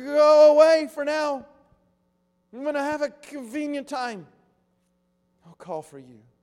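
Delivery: kindly, nervous, with "go" drawn out. Retelling how he answered a friend's request, mock kindly, nervous tone. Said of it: "perhaps in a kindly, nervous tone".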